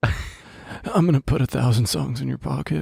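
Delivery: slow, oily, creepy flirtatious voice. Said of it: "a creepy guy trying to pick up women at a bar".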